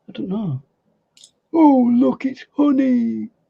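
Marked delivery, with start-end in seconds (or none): 1.5-3.2 slow, drawn-out, high and creaky cartoon voice. Answering a viewer's request for an impression: Winnie the Pooh voice. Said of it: "do an impression of Winnie the Pooh".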